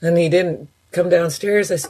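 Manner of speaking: normal talking voice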